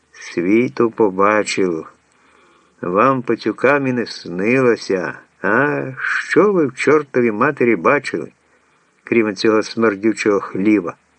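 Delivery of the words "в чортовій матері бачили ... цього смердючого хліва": ordinary delivery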